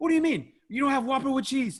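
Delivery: mock angry voice, pitched way up high. Retelling her mom arguing with a fast food worker, imitating an angry mom. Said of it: "She's mad".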